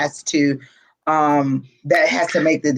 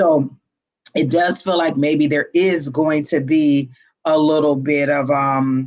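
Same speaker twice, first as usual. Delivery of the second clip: normal talking voice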